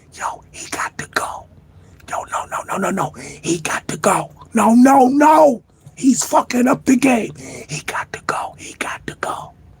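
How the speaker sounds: breathy whispered chatter. Retelling what others said behind someone's back: imitating someone whispering. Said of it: "They was behind his back whispering".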